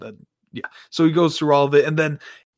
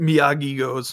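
ordinary talk

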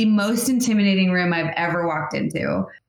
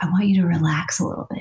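whispered delivery. Retelling what a man whispered to them after a scene, retelling a whisper. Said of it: "He just whispered to me".

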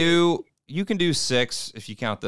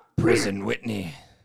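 put-on pirate voice, lower; 7 semitones lower than usual. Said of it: "I don't like that voice".

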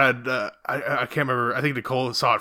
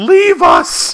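very high, very loud, shrill frantic shriek; 12 dB louder than usual. Retelling a movie scene where a character flips out: imitating a scream. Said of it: "he screams".

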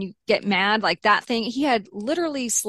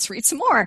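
lightly mischievous, playful, teasing tone; 3 semitones higher than usual. Retelling teasingly reading his messages aloud to him: retelling own playful tone. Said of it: "playfully was like".

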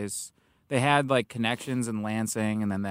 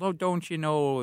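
Minnesota accent, pitched up; 6 semitones higher than usual. Comedian demonstrates how people near Minnesota talk, Minnesota accent. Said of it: "There's the Minnesota accent that's like that".

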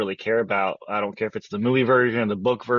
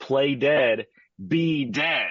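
put-on very slow, deliberate, hateful tone; 3 semitones higher than usual. Retelling a film scene where a character screams at a cat, retelling the scream. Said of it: "he screams at the top of his lungs".

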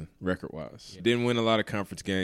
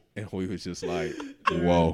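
ordinary talk, nothing marked

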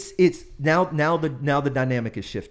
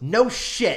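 sudden high-pitched yelled-out blurt, out of nowhere; 7 semitones higher than usual. Comedian retells a woman in a room of 300 yelling at him; retelling a yell. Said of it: "Like she yells it out".

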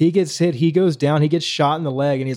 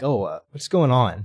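put-on uneasy, hesitant voice, lower; 5 semitones lower than usual. Retelling a story, voicing the adepts behind the villain, acting out uncomfortable hesitation. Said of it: "they're like very uncomfortable".

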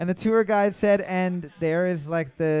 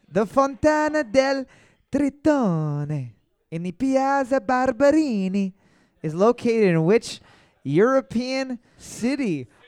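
fake accent that comes out Spanish; 5 semitones higher than usual. Reading a quiz question aloud, trying out a put-on Spanish-sounding accent. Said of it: "It was still Spanish".

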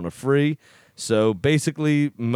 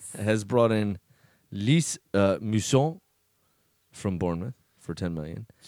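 put-on French-sounding accent; 3 semitones lower, 4 dB quieter than usual. Speaker reading football transfer news, in a French accent. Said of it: "You sound so French".

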